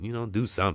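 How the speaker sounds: ordinary talk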